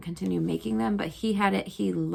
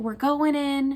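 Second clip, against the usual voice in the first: put-on high, joking, terrified panic scream; 7 semitones higher than usual. Recalling a man driving passengers down a hill toward a lake, speaker is retelling a scream. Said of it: "He would like start screaming".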